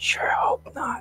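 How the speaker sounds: hushed whisper, under the breath. Retelling a reply once whispered back to a companion: retelling a whisper. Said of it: "and I whispered to".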